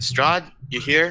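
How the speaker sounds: calling out loudly. Calling out for Strahd in an empty throne room: shouting. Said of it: "I just shout".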